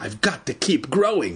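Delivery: ordinary delivery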